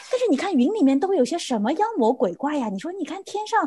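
put-on innocent little-kid voice, lively and full of life. Retelling what mother said watching a plane: imitating mother's childlike innocent tone. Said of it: "然后就像小孩子".

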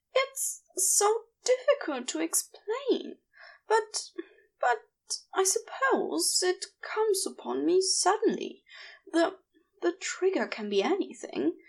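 high, nervous, giggly delivery. Narrator reads a character answering a request to explain, giggling nervously. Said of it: "he giggled nervously".

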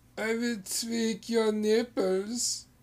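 put-on German accent. Playing out a bit between two speakers, in a put-on German accent. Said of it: "Whenever I've talked like that".

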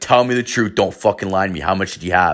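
put-on hard, fuming, furious interrogating tone. Retelling a man getting super mad at a buddy, retelling a super mad demand. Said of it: "he gets super mad at all my other buddies".

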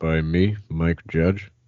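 calm-voiced impression. Introducing a podcast episode on Idiocracy, doing a Mike Judge impression. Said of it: "You're doing your Mike Judge impression".

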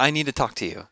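plain

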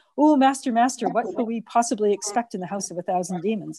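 ordinary delivery

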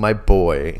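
plain

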